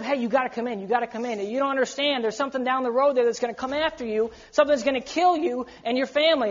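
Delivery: ordinary talk, nothing marked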